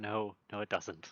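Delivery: low mutter, mumbled to oneself under the breath. Recounting your own earlier reply, muttered under your breath. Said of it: "Just like under my breath".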